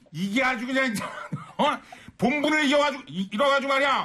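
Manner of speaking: mock angry, yelling rant.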